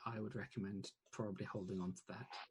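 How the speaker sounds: very quiet, hushed, confidential murmur. A narrator voicing the Queen as she pats a player's hand: speaking very quietly. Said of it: "says very quietly".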